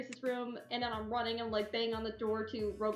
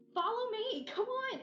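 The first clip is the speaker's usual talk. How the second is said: very high, stretched-out, drawn-out shout in character voice; 11 semitones higher than usual. Playing a character who calls Zach urgently: yelling in character. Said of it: "why are you yelling?".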